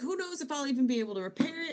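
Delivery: frantic, worried, panicked ranting. Speaker recaps a scene where a character panics: imitating panicked speech. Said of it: "he's panicking".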